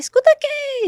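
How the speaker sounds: acted woman's yell, pitched way up, high and loud. Retelling how a woman beside the trafficker shouted from a distance, imitating a woman shouting. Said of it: "Ela começou a gritar".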